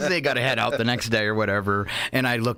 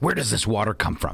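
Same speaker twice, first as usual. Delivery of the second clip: put-on grave, earnest, very serious tone, no joking; 3 semitones lower than usual. Retelling how a man asked a server questions, in a mock-serious tone. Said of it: "ask him stupid questions in a very serious tone".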